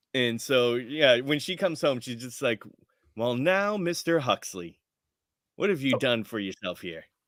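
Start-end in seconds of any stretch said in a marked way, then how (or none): 3.1-7.0 put-on drawling Southern accent. Retelling what Mom says when she comes home, in a southern drawl. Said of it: "stuck in a southern drawl".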